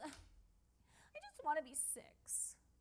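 put-on very soft, slow, drawn-out whiny kid voice, nearly whispered. Retelling what JoJo suddenly said during grown-up talk, imitating JoJo's whiny voice. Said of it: "in that kind of whiny voice".

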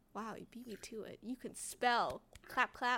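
low, quiet, patronizing, talking-down condescending tone. Talking to the other person, who spelled the show's name first, condescending. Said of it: "That sounded condescending".

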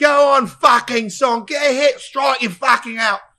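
very high, very loud, shrill screaming. Telling what happens by inning seven, the speaker acts out the crowd imitating fans screaming. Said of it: "you're screaming like".

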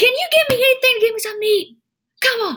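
shouting at very high pitch. Retelling what a man on a bench said to her, acting out his yelling. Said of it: "and then he yells at me".

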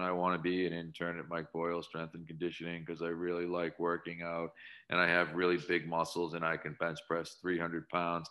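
low, flat, dull, unvaried monotone drone. Showing how an internship applicant sounds with no personality: flat monotone. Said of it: "if I get this monotone".

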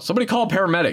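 shrill, very high-pitched yell. Retelling a film scene where a character yells for help: imitating a character yelling. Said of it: "he yells out".

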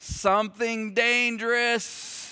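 put-on tiny, high, three-year-old toddler voice. Retelling the toddler's answer when the wife asked what he was doing: Kelton's little three-year-old voice. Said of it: "his little three-year-old voice".

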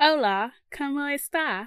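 Spanish spoken in put-on British accent. Showing the listener how they speak spanish, spanish in put-on british accent. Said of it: "speak Spanish to you with my British accent".

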